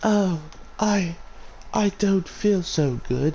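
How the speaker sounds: high, slow put-on British accent. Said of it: "I don't know why she's British".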